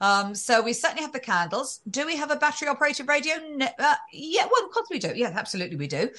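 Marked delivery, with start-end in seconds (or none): 3.5-6.1 uncertain, hedging tone. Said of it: "You don't sound very sure about that".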